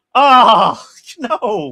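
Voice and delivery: loud, high dismayed cry. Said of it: "I went".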